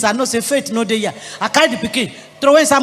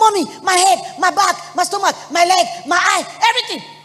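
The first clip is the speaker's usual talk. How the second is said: mock high, screaming cry of a young child; 6 semitones higher than usual. Retelling a four-year-old daughter crying out in pain: imitating a child screaming. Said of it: "she just started screaming".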